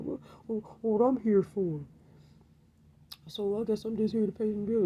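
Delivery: high, whining, mocking complaining man voice.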